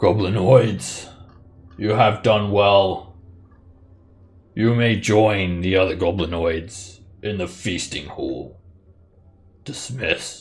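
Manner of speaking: lordly character voice, commanding and superior. Voicing the duke dismissing the goblinoids: Duke Zolto character voice. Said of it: "the duke, uh, speaks in common".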